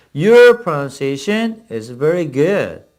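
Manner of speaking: very slow, careful model English reading. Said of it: "예, 바로 그겁니다".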